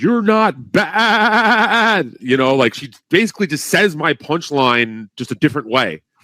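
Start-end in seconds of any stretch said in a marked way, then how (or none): 0.0-2.1 put-on squealing yell, very high, badly drawn out. Retelling what a heckler shouted during the set: imitating someone yelling. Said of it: "she yelled out".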